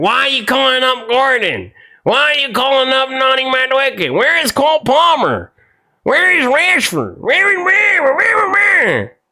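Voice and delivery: very high, doubting, skeptical voice. Recalling critics from the start of the tournament, imitating critics of gordon. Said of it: "people were talking so much shit about Gordon".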